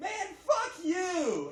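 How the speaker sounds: very high, swooping, playful teasing tone, plainly joking. Explaining tone lost in typed chat, saying it in a playful joking tone. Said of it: "you'll know I'm just joking".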